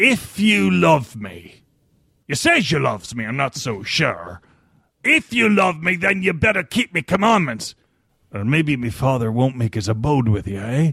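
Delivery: read in a put-on pirate voice. Recalling how they read a verse, in a pirate voice. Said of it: "I read it like a pirate".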